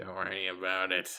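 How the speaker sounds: put-on sinister, menacing villain voice. Joking with a friend who asks about his sister, sinister villain voice. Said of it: "Why do you sound like the Joker?".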